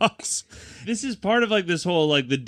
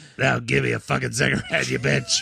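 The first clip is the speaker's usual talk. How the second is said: put-on raspy smoker's voice with robotic throat sound; 2 semitones lower than usual. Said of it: "I smoked for a million years and now I have a robot in my throat".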